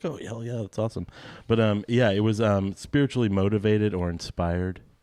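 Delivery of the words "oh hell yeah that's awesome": put-on eager, thrilled, fast, excited gush. Retelling his own past words from when he was young: imitating his younger self excited. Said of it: "I was young and stupid, and I was like".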